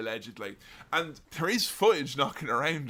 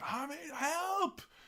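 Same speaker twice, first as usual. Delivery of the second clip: frantic, panicked cry pitched very high; 7 dB quieter than usual. Retelling an unedited clip of an injured wrestler: imitating someone frantic. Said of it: "he's frantic".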